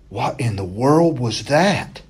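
trembling, quavering half-whisper. The narrator half-whispers to his growling dog after a strange noise, quavering half-whisper. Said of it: "In a quavering voice, I whispered to Rowdy".

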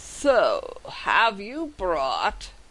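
lofty, arrogant, swooping dragon voice. Storyteller voices a red dragon speaking to the party, haughty dragon voice. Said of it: "speaks to you in a haughty voice".

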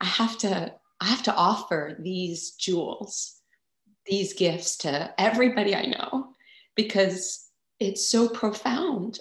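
speaking through tears, high-pitched crying. Speaker shares her personal story with listeners, crying while speaking. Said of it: "I don't know why I'm crying so much".

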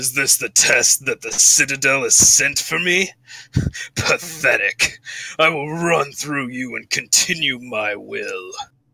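dark, imposing, commanding villain voice. A game master voices a rider on the battlefield addressing the players, really deep voice. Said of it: "You hear this really deep".

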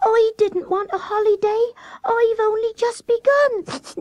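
very high, trembling, wobbling, quivering voice. Reading a children's story aloud, voicing Fuzzy Peg: quivering voice. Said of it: "said Fuzzy Peg in a quivering voice".

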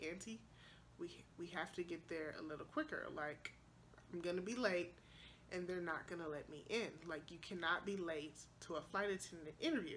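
very quiet, hushed, nice and calm tone. Retelling own words to the aunt who is driving: imitating own slow, calm words. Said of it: "real slowly".

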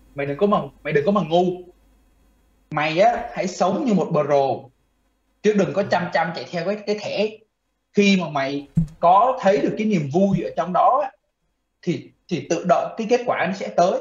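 normal talking voice

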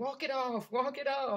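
play-acted very high scream. Retelling screaming at the television during a game: imitating own screaming. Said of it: "screaming at the television".

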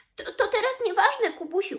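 jittery, nervous, very high-pitched voice. A piglet cuts off the bear's breakfast talk, nervously. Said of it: "powiedział nerwowo prosiaczek".

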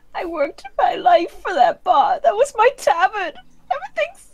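bawling character voice. Narrating the scene and voicing Martha as she cries, ugly bawling. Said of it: "like full stop crying".

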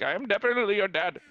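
put-on Indian accent. Retelling a funny video bit, Darth Vader with Indian accent. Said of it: "What if Darth Vader had an Indian accent?".

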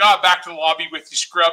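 plain

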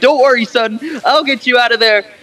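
play-acted high-pitched, frantic, panicky voice. Retelling a plot, a man reassures his son trapped as a robot bear, mock-panicked voice.

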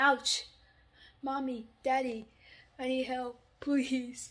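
fake soft whimpering. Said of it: "Just cry softly".

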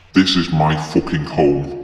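deep, gravelly, menacing, very low and slow. A man refusing to leave shouts at the hospital staff, booming gravelly voice. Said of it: "I received no such relief when I heard that same booming voice command that we ... The [name]'s gravelly voice left us stunned for a moment. The sound seemed to boom".

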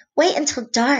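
eager, excited storybook exclaiming. Stellaluna speaks to the birds hanging among the bats, excitedly. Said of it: "Stellaluna said excitedly".

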